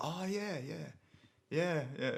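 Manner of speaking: dismissive, sarcastic-sounding run of yeahs, very high. Retelling a work exchange where the speaker's reply sounded sarcastic: retelling a sarcastic-sounding reply. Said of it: "I just sounded so sarcastic".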